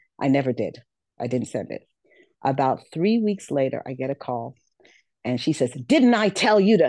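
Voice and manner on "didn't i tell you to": mock, loud, high-pitched scolding screaming tirade. Retelling a phone call from a recruiter: imitating someone screaming. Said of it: "She just started commencing to screaming at me".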